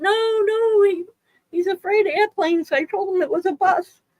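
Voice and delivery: high-pitched yelling. Retelling yelling at the relief pilot on a plane: imitating own yelling. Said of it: "yelling at the, the relief pilot".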